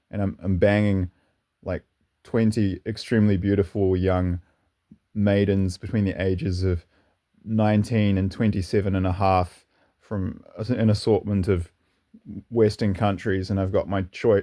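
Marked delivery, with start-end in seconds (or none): none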